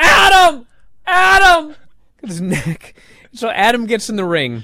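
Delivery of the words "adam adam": shrill, very high, loud screaming cry. Retelling how Roddy took a bump holding his neck, imitating Roddy screaming. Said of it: "And he's screaming".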